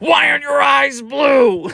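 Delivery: very high, sudden, shrieked yell. Retelling a man yelling at the speaker's dog, retelling a yell. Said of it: "he yells at my dog".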